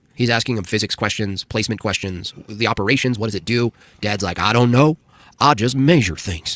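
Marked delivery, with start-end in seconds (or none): 4.4-6.6 put-on southern accent. Retelling how a dad answers his son's questions, imitating Dad's southern accent. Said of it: "his dad has the southern accent".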